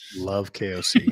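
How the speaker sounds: dry, sarcastic tone of fake approval. Told they're a big fan of someone, replying in a sarcastic tone. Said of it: "That's very sarcastic, by the way".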